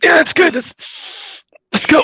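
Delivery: high, winded, slow, hiding breathlessness, playing it cool. Voicing a hobbling druid who arrives: out of breath, hiding it. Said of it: "doing his best to make it seem like he's not completely out of breath".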